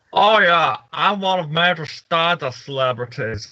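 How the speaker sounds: mocking put-on voice. Making fun of a celebrity at the event: mocking Tommy Wiseau impression. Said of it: "Don't make fun of me".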